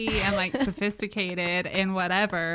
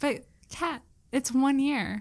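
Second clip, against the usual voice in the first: tearing up, higher; 5 semitones higher than usual. Marking one year together with another speaker, tearing up. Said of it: "Don't cry".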